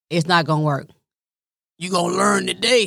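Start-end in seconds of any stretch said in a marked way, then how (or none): 1.7-2.9 rough, raspy, creaky voice. Warning a man writing to her mother, in Kevin Hart's daddy voice. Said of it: "in my Kevin Hart's daddy's voice".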